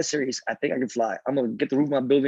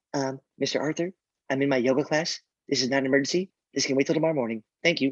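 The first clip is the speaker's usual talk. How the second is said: sneering, mocking caricature of an entitled woman. Retelling a phone call with the woman who answered: imitating a Karen voice. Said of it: "this is my Karen voice".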